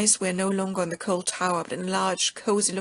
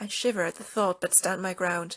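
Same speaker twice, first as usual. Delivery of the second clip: ordinary delivery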